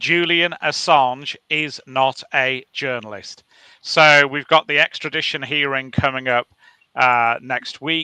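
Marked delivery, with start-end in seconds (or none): 0.0-3.4 slow, measured, unhurried, each word placed. Starting a rant about someone followed for years, slow and deliberate. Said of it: "I want to say it slowly".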